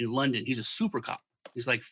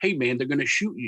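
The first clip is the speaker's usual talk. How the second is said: ordinary delivery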